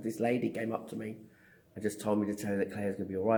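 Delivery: ordinary delivery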